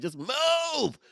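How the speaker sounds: very high, urgent yell with "move" stretched out. Imitating the other speaker coaching from the mat: imitating an urgent coaching yell. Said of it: "You're not yelling, being rude".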